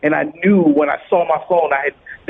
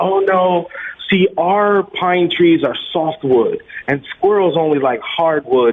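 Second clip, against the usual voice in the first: usual speaking voice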